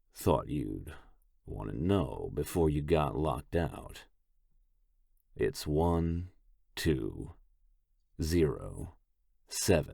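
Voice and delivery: achingly slow, halting, every word drawn out hard. Reading a character's line in a story aloud: speaking achingly slow. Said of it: "Tung speaks slow, achingly slow".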